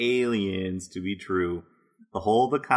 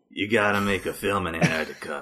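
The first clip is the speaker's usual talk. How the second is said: put-on grizzled gruff old man voice, lower; 3 semitones lower than usual. Imitating a cameraman who suggested filming in Antarctica: grizzled old cameraman voice. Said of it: "No, more like".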